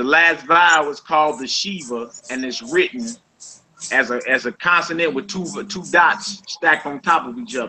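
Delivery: plain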